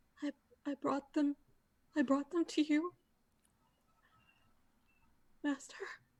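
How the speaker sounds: trembling whisper. Kneeling at the water's edge, speaking to the Master in a very shaky whisper. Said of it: "just whisper in a very shaky voice".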